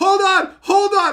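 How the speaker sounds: very loud, shrill yelling. Telling a story about a phone call with mom, retelling a yell at mom. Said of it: "I'm yelling at my mom".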